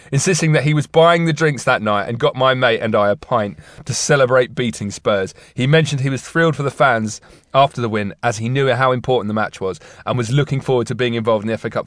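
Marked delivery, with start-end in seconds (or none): none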